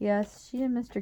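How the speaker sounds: ordinary delivery, nothing marked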